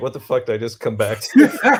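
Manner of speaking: mock bewildered, disbelieving, baffled exclamation tone. Imitating another speaker returning to the talk: imitating Travis, baffled. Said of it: "Travis is like".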